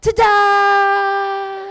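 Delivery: put-on high, loud, belted proud toddler shout.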